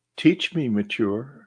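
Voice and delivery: very warm, soft-hearted voice. Retelling what they said on waking in the night, in a very warm voice. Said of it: "I say in this very warm voice".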